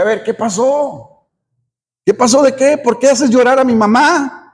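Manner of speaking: plain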